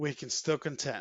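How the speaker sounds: normal talking voice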